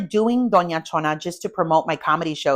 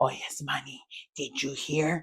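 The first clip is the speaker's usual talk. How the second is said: put-on gossipy voice, lower and quieter; 4 semitones lower, 12 dB quieter than usual. Showing how the gossiping mom talks: imitating gossiping mom. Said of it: "That's my mom".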